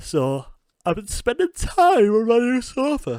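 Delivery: very high, very loud words through a yawn. Speaker updating listeners on what they've been up to, yawning while talking. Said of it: "Excuse me for yawning".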